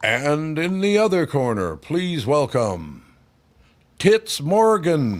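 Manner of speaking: loud, drawn-out, grand boxing ring announcer call. Retelling how the boxers were announced at a fight: imitating a ring announcer. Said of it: "They point to the corner".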